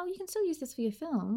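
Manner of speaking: put-on very high, quick, tender motherly coo. Describing how she would switch sides, imitating a motherly, tender tone. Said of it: "like in a really motherly".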